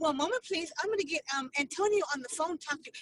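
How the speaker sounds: quick, sweet, coaxing little voice. Retelling what Deanna said about getting Antonio on the phone, in Deanna's sweet little voice. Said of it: "with her little sweet little voice".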